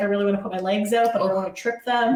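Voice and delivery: plain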